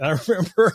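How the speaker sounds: high, loud laughing while talking.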